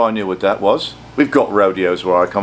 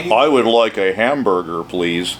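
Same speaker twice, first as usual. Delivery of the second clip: fake, put-on American accent; 3 semitones lower than usual. Offering to show off an American accent: put-on American accent. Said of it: "I can do an American accent".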